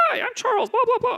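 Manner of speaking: very high, squeaky chipmunk voice. Describing a pitch-shifted recording that didn't play, imitating Charles as a chipmunk. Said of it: "He sounded like a chipmunk".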